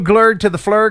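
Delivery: loud fake Dutch gibberish in a German accent. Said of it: "glurgy flurgy, but with it, like, a German accent".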